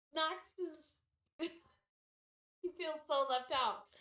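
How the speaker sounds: talking through laughter. Describing the campsite to players, laughing while talking. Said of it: "I'm laughing at the cat".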